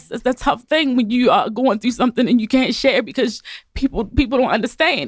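crying happy tears. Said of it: "Let me get myself together".

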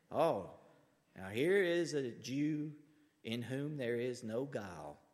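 put-on southern Alabama accent. Retelling a Bible story, voicing Jesus greeting a man, in an Alabama accent. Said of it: "He's speaking like he's from Alabama".

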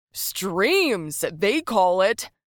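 slow, loud, drawn-out hollering yell. A drunk man at a bar speaks up, yelled. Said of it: "yelled [name]".

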